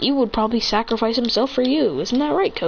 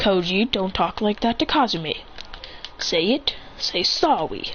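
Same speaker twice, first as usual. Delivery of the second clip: plain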